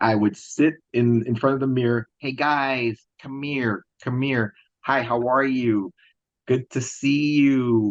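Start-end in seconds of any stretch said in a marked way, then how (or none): 2.2-7.9 put-on American accent. Retelling practicing speech from TV in front of a mirror: imitating practicing an American accent.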